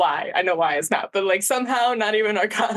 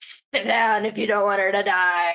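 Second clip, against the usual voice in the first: put-on grumpy, cantankerous old man voice. A player speaks as their character during a dice game: grumpy old man voice. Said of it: "Some grumpy old man just came out of me".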